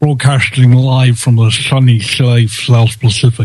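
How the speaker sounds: lisping through every s, secret-agent style. Opening a live broadcast, the host repeats the intro with a James Bond lisp. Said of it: "let's try that with a James Bond lisp".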